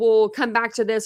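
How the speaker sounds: normal talking voice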